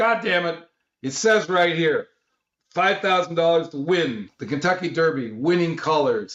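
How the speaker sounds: worked-up, heated, agitated, high-pitched outburst. Retelling Dino getting up in a man's face, imitating agitated Dino. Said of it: "he gets really agitated".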